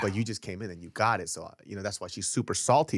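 ordinary delivery

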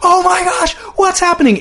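put-on shrieking, very high-pitched screaming. Retelling how two announcers in the booth reacted, imitating their screaming. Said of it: "both are just screaming like".

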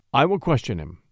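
plain

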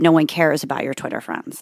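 plain

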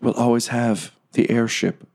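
soft whisper. Voicing a character who whispers to a departing player character: whispering. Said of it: "she whispers in your ear".

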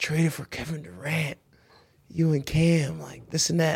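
put-on low, soft voice. Retelling a teammate's news on the phone: imitating a low, soft voice. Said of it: "like, all low".

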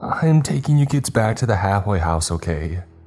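high, trembling, quavering, shaky squeak. The bus driver calls to the kids from the front, shaky, trembling voice. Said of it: "The bus driver's voice was eerily shaky. I could hear every tremble in his tone. / I had never heard a grown man's voice go that high, / The bus driver all but squeaked from the front. I had never hea".

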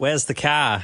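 Australian-sounding voice. Showing the difference between the two accents: australian accent. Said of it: "Australians are like".

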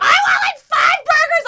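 very high, slow, drawn-out screaming. Retelling ordering at a drive-through window: imitating own screaming. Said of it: "I'm, like, screaming at the lady".

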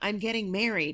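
mock whispering. Retelling a dream where the ex whispers to a father: imitating a whisper. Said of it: "whispers in my father's ear".

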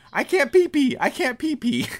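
high-pitched yelling, repeated over and over. Retelling Anderson Silva in the next stall at a drug test, imitating Anderson Silva yelling. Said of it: "he's just yelling".

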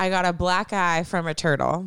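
ordinary talk

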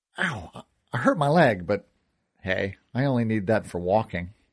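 ordinary delivery, nothing marked

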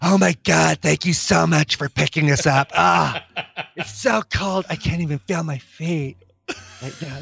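put-on hoarse, really raspy drunk woman's voice. Retelling picking up a hammered woman, the speaker does her really raspy voice. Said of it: "with a really raspy voice".

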